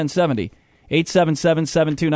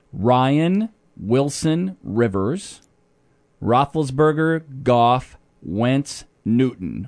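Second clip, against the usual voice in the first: a little slower, careful, words kept apart; 4 semitones lower than usual. Repeating the list after being asked to go slower: a little slower. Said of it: "Try it again a little slower".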